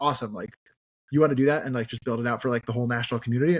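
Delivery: ordinary delivery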